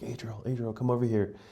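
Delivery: hushed stage whisper, half-whispered. Retelling being woken at night in a cave: imitating a half-whisper. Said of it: "whispering my name".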